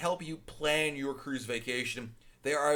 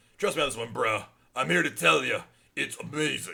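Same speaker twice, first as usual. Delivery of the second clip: put-on rough, creaky, macho bro voice. A host speaking to listeners in his manly man voice. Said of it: "it's my manly man voice".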